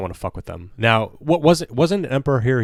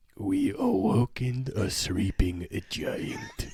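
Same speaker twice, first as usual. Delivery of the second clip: soft, hushed, put-on Japanese accent; 8 dB quieter than usual. Asked to play Emperor Hirohito in a bit, answering in a mock Japanese accent. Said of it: "My Japanese accent on point".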